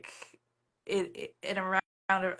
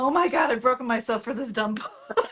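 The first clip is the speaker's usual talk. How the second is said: near-sobbing, high, tearful crying; 5 semitones higher, 4 dB louder than usual. Retelling emailing an editor and agent from the floor: imitating own past crying.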